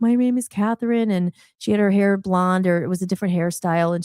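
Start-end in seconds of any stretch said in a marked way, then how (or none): 0.0-1.1 put-on, fake tearful voice. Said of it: "she's, like, crying".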